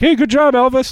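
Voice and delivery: high, loud, teasing call.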